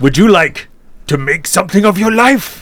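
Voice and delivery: horror-film killer voice. A speaker voices the corporation's offer to a newcomer, Saw voice. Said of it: "Said in the Saw voice".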